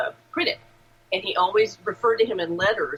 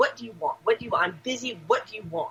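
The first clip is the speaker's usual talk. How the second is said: put-on angry man voice. Recounting meeting a man with a friend, the speaker imitates him angry. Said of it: "he's pissed".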